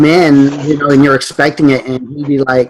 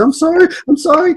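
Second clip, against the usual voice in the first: put-on tearful, sobbing, very high child's voice; 14 semitones higher than usual. Father retelling his daughter apologizing after being punished, imitating a crying child. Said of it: "and she's crying".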